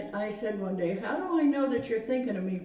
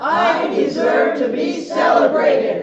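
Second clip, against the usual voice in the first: very loud, full-voiced, top-of-the-lungs shout; 7 semitones higher, 13 dB louder than usual. Repeating an affirmation after being asked to say it at top of voice: shouting at the top of voice. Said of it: "And the top of your voice".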